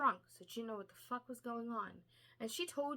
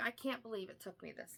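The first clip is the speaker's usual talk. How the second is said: acted angry outburst in a man's voice. Retelling a scene where Micah confronts Bryce, acting out his angry words. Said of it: "he's very fucking angry".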